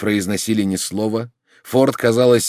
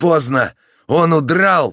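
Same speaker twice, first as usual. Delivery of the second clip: rough, hoarse, high-pitched shout; 6 semitones higher, 3 dB louder than usual. A narrator reads Dan calling out from behind the narrator on the shore: hoarse shout. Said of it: "крикнул Дан позади меня".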